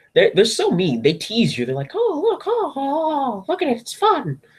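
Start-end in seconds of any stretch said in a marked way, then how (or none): 2.0-4.4 squeaky voice, high and slow. Mocking how Crunchyroll teases viewers, Mickey Mouse impression. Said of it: "That's my Mickey Mouse impression".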